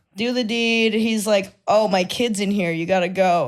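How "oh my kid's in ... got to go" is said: usual speaking voice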